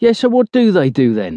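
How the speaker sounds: challenging, daring tone. One speaker presses another after his claim, in a challenging tone. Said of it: "Cookie asks in a challenging tone".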